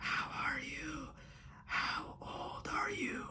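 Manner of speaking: very slow, drawn-out, hoarse deathly whisper. Retelling a story where a pale undead girl questions them: hoarse death whisper. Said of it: "she whispers this hoarse, you know, whisper of death".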